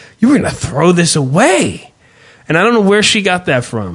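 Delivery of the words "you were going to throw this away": acted-out, reproachful, disapproving, guilt-tripping tone. Speaker imitates what she said on opening the bag: imitating a disapproving tone. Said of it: "that tone where it's like this is bad".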